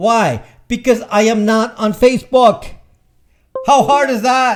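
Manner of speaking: mad, ranting shout. Having had adult beverages and getting mad, the speaker rants to viewers: shouting. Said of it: "I'm shouting here".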